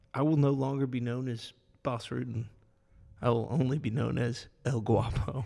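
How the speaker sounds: ordinary talk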